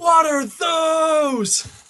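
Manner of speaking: high, slow, drawn-out yell.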